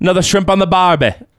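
bad put-on Australian accent. Joking about an Australian player: bad Australian accent. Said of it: "Awful. That was awful".

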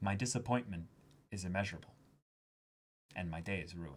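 grave, very quiet, low, hushed somber tone. Showing how the disappointment line has to be said, very somber. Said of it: "You have to say it with like very like somber".

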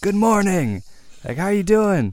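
put-on very high, loud hollered yell. Walking to school, retelling yelling at the man, acting out his own yell. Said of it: "And yelled at him".

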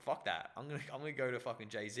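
normal talking voice

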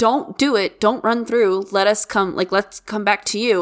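ordinary talk, nothing marked

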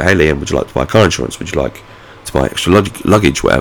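ordinary talk

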